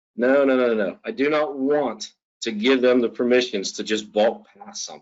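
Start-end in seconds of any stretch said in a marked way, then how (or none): none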